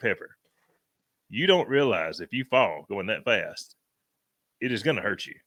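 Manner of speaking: usual speaking voice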